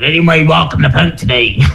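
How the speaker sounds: put-on pirate voice. Radio host, asking listeners for voice notes, says the phrase: pirate voice. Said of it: "say this particular phrase in your best pirate voice".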